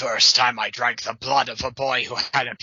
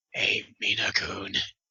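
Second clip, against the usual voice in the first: low, dark, soft, hushed vampire voice; 4 semitones lower, 7 dB quieter than usual. Reading a story aloud, Alucard saying goodbye to Mina-kun, dark vampire voice. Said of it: "he said in his dark vampire voice".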